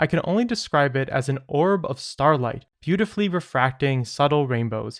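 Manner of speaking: usual speaking voice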